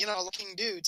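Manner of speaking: ordinary delivery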